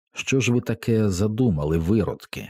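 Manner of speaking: ordinary delivery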